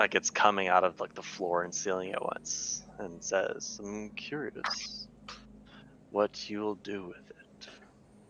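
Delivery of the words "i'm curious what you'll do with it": low, gravel-edged, barely audible whisper. Narrator voicing a voice that reverberates through the dungeon, low gravelly voice. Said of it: "It's a low gravelly voice".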